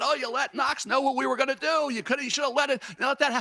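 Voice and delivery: put-on high screaming rant, breaking off. Retelling a general manager's angry outburst at coaches: imitating Carl Peterson screaming. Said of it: "Carl Peterson was screaming".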